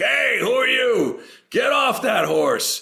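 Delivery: very high, drawn-out hollered yell. Retelling how a teamster started yelling on arrival: imitating a yelling teamster. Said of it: "this teamster starts yelling at me".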